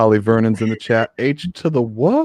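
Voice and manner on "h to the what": very drawn-out, slow, high voice with voice cracks. Greeting a viewer in the chat during the show, voice cracking. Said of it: "See my voice crack there?".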